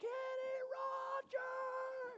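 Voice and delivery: very high, shrill, top-of-lungs calling-out yell. Retelling running through a funeral home searching: imitating own yelling at top of lungs. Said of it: "I'm yelling at the top of my lungs".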